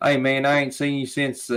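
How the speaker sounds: heavy southern drawl. Describing a very southern father to a listener: imitating dad's thick southern drawl. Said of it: "my dad has a very s- thick southern drawl".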